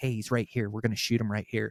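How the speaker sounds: soft, hushed half-whisper. Retelling telling the cameraman the deer is right there: half-whispering. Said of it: "I whisper to my cameraman".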